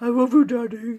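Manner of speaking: loud, bellowing cartoon dog voice. Imitating the pet husky who talks: Scooby-Doo voice. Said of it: "in his Scooby-Doo voice".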